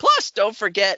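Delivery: voice jumping up an octave, high and loud.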